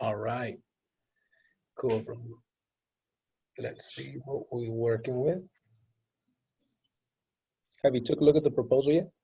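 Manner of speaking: talking low and quiet, strained voice. Going over a proposal with a coworker, talking low, strained voice. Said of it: "I'm talking short and I'm talking low 'cause my voice is still a little strained".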